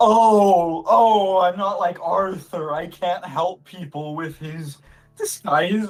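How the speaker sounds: put-on drunk slurred speech. Voicing a drunk character answering a player: drunk slurred speech. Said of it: "You're piss drunk".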